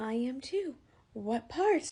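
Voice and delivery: put-on very slow, very drawn-out Irish accent. Retelling what the man next to the speaker answered, in an irish accent. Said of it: "I hear his accent".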